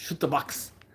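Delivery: Brazilian Portuguese accent. Saying a name after being asked to: Brazilian accent. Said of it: "say it like with your Brazilian accent".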